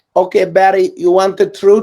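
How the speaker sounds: put-on Eastern European accent. Retelling Katrina's answer after being accused of lying: Katrina's Eastern European accent. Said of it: "in her Eastern European accent".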